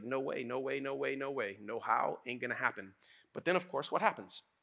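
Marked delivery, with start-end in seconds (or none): 0.0-2.9 mock emphatic, incredulous, insistent tone. Retelling a Bible story, acting out Peter refusing to believe: imitating disbelief. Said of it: "Peter can't believe it".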